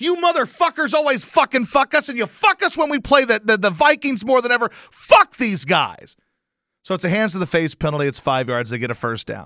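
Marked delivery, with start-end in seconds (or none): 0.0-6.2 mock ranting, high, angry yelling. Retelling a call against their team, the speaker reenacts yelling at the TV. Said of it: "I'm yelling at the TV".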